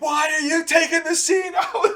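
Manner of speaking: livid, very high screaming. Recalling yelling about a scene being cut out, retelling his own screaming. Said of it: "I remember screaming at the house".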